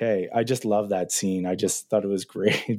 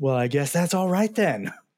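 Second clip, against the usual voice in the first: put-on American accent, high-pitched screaming; 7 semitones higher than usual. Retelling a TV scene where Neil Patrick Harris yells at the screen: imitating Neil Patrick Harris screaming, American accent. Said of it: "just screams at it".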